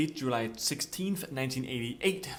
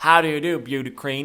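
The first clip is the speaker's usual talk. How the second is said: put-on Southern accent, louder; 10 dB louder than usual. Mocking how a movie's MJ sounds, doing a Cowboy MJ southern voice. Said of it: "he sounds like he's from the south or something. It's like Cowboy M J".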